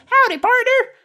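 very high-pitched little talking lizard voice. Narrating a lizard that looks up and greets the player: talking lizard voice. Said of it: "a lizard runs over your foot, looks up at you and says".

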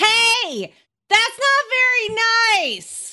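top-of-the-lungs shrill high scream, hey long drawn-out. A tabletop player's character charges toward another character, screaming.

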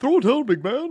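very high-pitched, helium-like voice. Quoting the ad's line to another speaker: high-pitched Bill Walton imitation. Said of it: "He is kind of a high pitch there".

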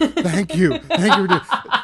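gushing laughing voice.

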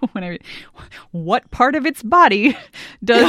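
laughing and giggling through words. Reading a trivia question aloud to players: laughing while talking. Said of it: "you'll see why I'm laughing".

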